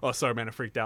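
soft, calm, casual and unbothered. Retelling a movie scene's apology after a crash: imitating a calm apology. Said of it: "immediately goes back to being calm".

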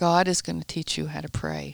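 ordinary delivery

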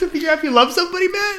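incredulous, disbelieving outburst.

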